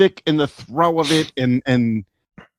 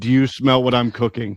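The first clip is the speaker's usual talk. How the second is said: ordinary talk, nothing marked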